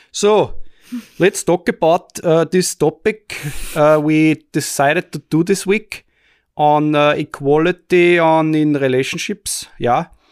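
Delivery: put-on Austrian English accent. Introducing this week's episode topic, speaker switches on a put-on Austrian English dialect. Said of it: "turn on my Austrian English dialect now".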